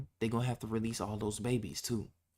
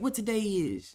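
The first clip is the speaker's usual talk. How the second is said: put-on high, tiny little old lady voice; 9 semitones higher, 5 dB louder than usual. Retelling a little girl on the phone in a store, little old lady voice. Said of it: "talking like a little old lady".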